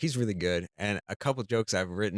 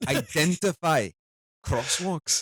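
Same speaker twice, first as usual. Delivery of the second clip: put-on Scottish accent, pitched up; 6 semitones higher, 4 dB louder than usual. Joking about prove-you're-not-a-robot tests with a co-host: scottish accent. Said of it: "wrote that in a Scottish accent".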